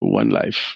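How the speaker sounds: put-on French accent on English. Quoting a saying from a fourteen-year-old relative: french accent. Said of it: "with a French accent".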